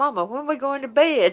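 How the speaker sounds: put-on high, babyish, whimpering, whiny dog voice. Voicing the dog that was whining like a baby: voicing the whining dog. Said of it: "she was like".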